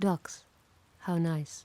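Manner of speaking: creepy, sinister, eerie, unsettling serial-killer tone. Spotting ducks near a dirty bridge, said creepy like a serial killer. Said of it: "You sound like a serial killer".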